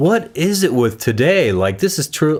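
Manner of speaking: normal talking voice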